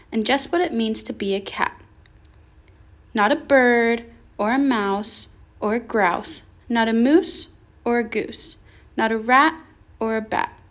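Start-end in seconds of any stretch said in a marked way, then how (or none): none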